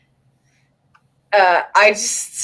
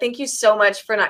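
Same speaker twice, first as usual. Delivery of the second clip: ordinary talk, nothing marked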